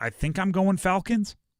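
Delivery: question-like rising tune on "Falcons". Picking the NFC South winner, rising at the end like a question. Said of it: "there's probably a question mark at the end of that. I didn't say it with a period or an exclamation point".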